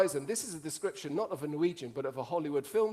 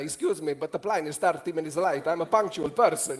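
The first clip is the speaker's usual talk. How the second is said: put-on Italian accent; 6 dB louder than usual. Retelling what they actually said yesterday about the late plane, Italian accent. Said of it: "I thought I'd try it in an Italian accent".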